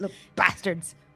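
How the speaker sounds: angry muttering under her breath. Voicing a character rummaging for components: muttering angrily to herself. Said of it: "Just muttering, muttering to herself".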